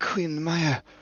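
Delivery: hushed, whispered voice. Voicing a frightened crew member telling the queen about a creature: whispering. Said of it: "she whispers to you".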